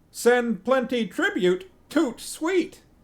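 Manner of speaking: angry parrot voice. Deciding what their side says next, in an angry parrot person voice. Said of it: "my angry parrot person voice".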